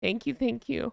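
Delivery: choked up with emotion. Thanking viewers after hearing a donation total, fighting back tears. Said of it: "I get so emotional about this stuff".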